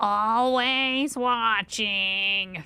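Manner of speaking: cartoon voice with "always" drawn out. Going over a character's traits, the speaker slips into a really bad Roz impression. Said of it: "That's my really bad impression".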